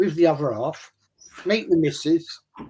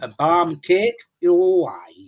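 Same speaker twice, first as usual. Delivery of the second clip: put-on Barnsley accent. Casting friends as Barnsley pub characters, speaker tries a Barnsley accent. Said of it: "I can do a pretty damn good Barnsley accent".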